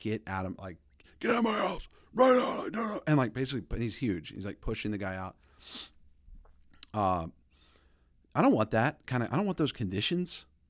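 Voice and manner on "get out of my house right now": very high, bear-like roaring scream, climbing in pitch. Retelling how a man screamed at someone to get out of his house, retelling a roaring scream. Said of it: "starts roaring like a bear, like screaming".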